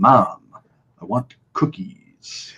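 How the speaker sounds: halting delivery with words broken up by gaps. Explaining an impression that improves the further it goes: monotone with pauses. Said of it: "you want those pauses, you want that monotone".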